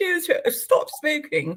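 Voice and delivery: fake upper-class voice. Imitating him telling her to stop smoking: imitating someone speaking posh. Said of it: "does he speak posh when he says that?".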